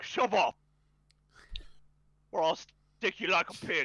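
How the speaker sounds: hostile, menacing, threatening goblin voice. Narrating as a hobgoblin looks at a player and threatens them: hobgoblin's threat. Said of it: "One of the hobgoblins looks at you".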